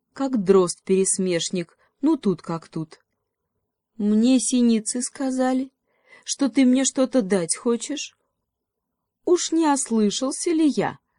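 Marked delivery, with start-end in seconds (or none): 4.0-11.0 sly, needling, snide tone, pitched up. Narrator reading a mockingbird questioning a crossbill in a fable, snide. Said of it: "ехидно так поинтересовался Дрозд".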